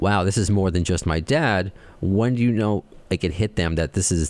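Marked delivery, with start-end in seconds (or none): none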